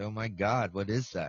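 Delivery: ordinary talk, nothing marked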